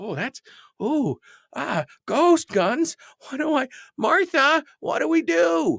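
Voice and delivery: very high, slow, quaking, frightened, rising panic. Mocking non-gun people who panic over ghost guns: imitating frightened non-gun people. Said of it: "kinda quaking in their boots about all this".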